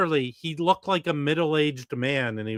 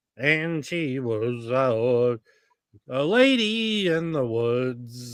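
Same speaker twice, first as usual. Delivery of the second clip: every word stretched, very slow and drawn-out. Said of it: "I'm going to do my [name] impression".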